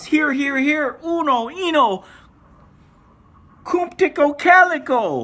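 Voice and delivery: very high, drawn-out, scared, frightened calling out. Narrator reads the old man calling his dogs from his bed, frightened, calling his dogs. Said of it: "The old man was so scared he couldn't stand up, / The old man was so scared he couldn't stand up, so he called his dogs from his bed. / The old man was so scared he couldn't stand up, / The old man wa".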